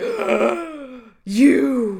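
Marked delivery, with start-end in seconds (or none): 1.2-2.0 loud, shocked gasp of recognition.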